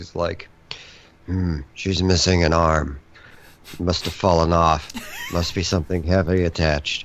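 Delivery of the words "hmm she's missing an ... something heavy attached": low, flat, grizzly, dead-level monotone. Describing a scene, quoting Geralt in his monotone grizzly voice. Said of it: "he's like has such a monotone, like grizzly voice".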